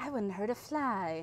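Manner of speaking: line said with a lilt. Showing how Mother's voice sounds: lilty Mother voice.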